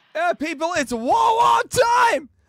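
high, loud, drawn-out hype shout.

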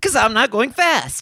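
very high-pitched, glum, mopey hedgehog voice. Acting in an improvised commercial, speaking as Sonic: Sonic voice. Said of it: "Why are you depressed, Sonic?".

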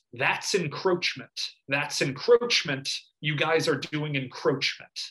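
normal talking voice

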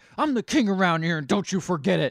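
put-on very loud, high, blustering drunken yell. Retelling a movie scene where a character shouts at dinner: imitating a drunk yell. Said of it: "just starts yelling".

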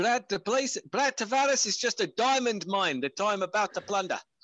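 put-on South African accent. Speaking as a fighter about his opponent Brad Tavares, Dricus impression, South African accent. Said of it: "but that South African accent".

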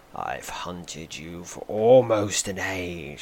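cold voice. Reading a knight's threat to a hunted murderer: cold voice. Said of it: "he says coldly".

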